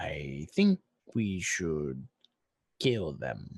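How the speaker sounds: low, matter-of-fact voice, stating the obvious. A player's character speaks near the meditating earth cultists, quietly. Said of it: "I I say quietly".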